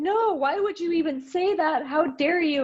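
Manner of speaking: put-on, very high, tearful indignant outburst. Retelling answering a question while crying, re-enacting an indignant outburst. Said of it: "And I got all indignant about it".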